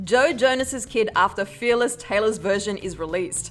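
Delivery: plain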